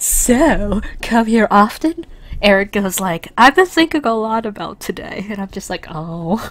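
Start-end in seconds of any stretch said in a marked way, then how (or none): 0.0-2.0 slow, drawn-out, sultry seductive voice. Voicing Diva so that Erik gets seduced: Diva's sexy voice. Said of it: "trying to put on my best sexy voice".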